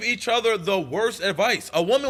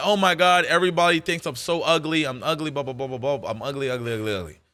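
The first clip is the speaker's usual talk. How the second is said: mock, very low, blubbering, whiny crying; 7 semitones lower than usual. Describing a girl's first online video, mock crying, whiny. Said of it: "she was on the internet crying like".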